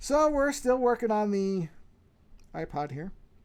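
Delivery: speaking through a yawn. Speaker narrating a work session after checking the mic; yawning. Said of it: "Sorry, I'm yawning".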